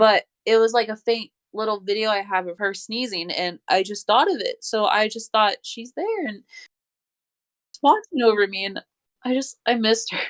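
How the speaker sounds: crying through every word, tearful, voice breaking. Talking with another person about someone she misses, crying while talking. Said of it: "I'm crying right now".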